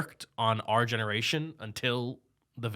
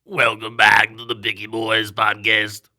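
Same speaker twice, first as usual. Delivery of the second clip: put-on electrolarynx-style voice, louder; 8 dB louder than usual. Welcoming listeners back to the podcast, put-on voice like a throat microphone. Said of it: "You sound like you're holding a microphone to your throat".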